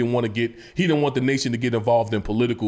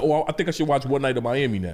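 ordinary talk

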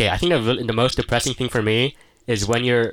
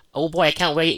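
higher, gushing, eager nerd voice; 6 semitones higher than usual. Complaining that another speaker makes him sound nerdy: mocking himself as an eager nerd. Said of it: "you make me sound like".

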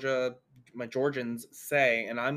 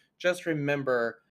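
ordinary talk, nothing marked

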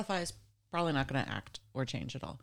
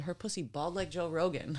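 ordinary delivery

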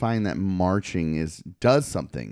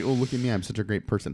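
usual speaking voice

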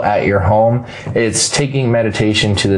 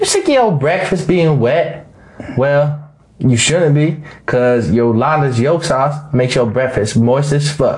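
put-on, high Australian accent, salesy advertising pitch; 5 semitones higher than usual. Reading the episode's sponsor spot for Yolanda's Yolk Sauce in an Australian voice. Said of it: "That's an Australian voice I do".

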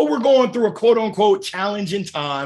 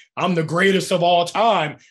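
ordinary delivery

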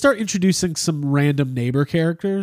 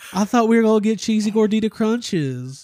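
sudden put-on Southern accent, pitched up; 5 semitones higher than usual. Imagining what they would say to Abby, in a Southern accent. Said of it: "I have like a Southern accent for some reason".

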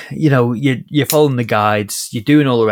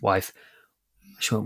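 ordinary talk, nothing marked

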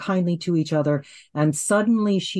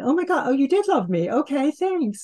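much higher, high put-on voice.

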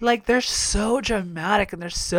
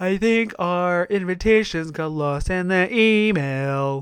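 casual delivery with "email" drawn out long. Retelling a funny line from someone whose voice you love: Willow voice. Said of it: "I love Willow's voice 'cause she's like".

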